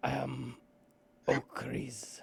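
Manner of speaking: rough, gravel-throated, creaky voice. A game narrator voicing the Dithovian introducing himself to new friends, gravelly Dithovian voice. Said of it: "in a gravelly voice".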